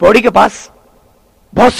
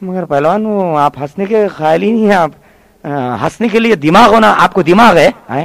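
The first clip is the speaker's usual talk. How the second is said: ordinary delivery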